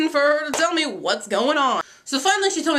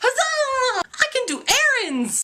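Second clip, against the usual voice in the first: very high, sarcastic fake excitement and cheer; 11 semitones higher than usual. Retelling a switch from grumbling about a weekday off: imitating own mock cheer. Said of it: "I changed my grumble, grumble attitude, and it became".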